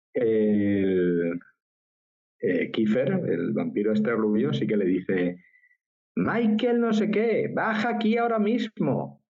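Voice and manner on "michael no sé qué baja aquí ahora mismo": very high, bossy, scolding mom voice. Retelling what the blond vampire says to another character, mock mother tone. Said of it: "Así como si fuese su madre".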